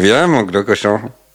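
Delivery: performed, put-on Tahitian accent. Asked by another speaker to do the accent, he performs a put-on Tahitian rae-rae accent. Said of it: "L'accent réré de Tahiti".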